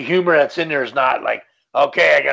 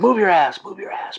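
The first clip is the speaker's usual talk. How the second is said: high, urgent, tense whisper-yell; 5 semitones higher than usual. Retelling a tense movie scene where characters urge someone on: imitating a whisper-yell. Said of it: "Whisper yelling to each other".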